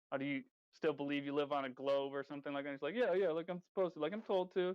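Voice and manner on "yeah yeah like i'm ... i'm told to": mock sarcastic tone, acted out. Speaker retells how she answers his globe question, imitating her sarcastic reply. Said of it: "like all sarcastic like that".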